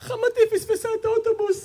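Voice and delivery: very high, fast, crying wailing sob. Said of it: "בוכה, צורחת".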